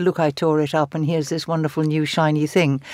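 usual speaking voice

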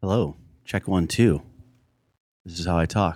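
speaking quietly. Doing a mic sound check for a podcast, speaking quietly. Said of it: "You're going to have to talk louder".

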